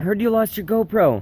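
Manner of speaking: high, excited, eager voice.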